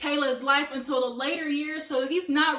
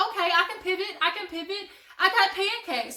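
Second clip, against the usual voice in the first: panicking to herself, near-panic scramble; 4 semitones higher than usual. Retelling a Housewives scene: imitating a panicked voice. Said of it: "she almost panics".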